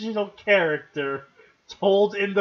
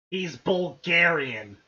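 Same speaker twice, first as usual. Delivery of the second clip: said with open, contemptuous disdain; 3 semitones lower than usual. Remarking on a profile, saying it with disdain. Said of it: "Why must you say that with such disdain".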